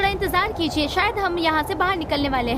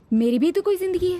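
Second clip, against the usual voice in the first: plain reading voice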